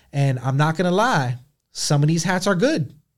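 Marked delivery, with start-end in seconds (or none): 1.7-2.9 surprised, caught-off-guard voice. A speaker deliberately says this line in a surprised voice. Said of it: "I'm saying this in a surprised voice".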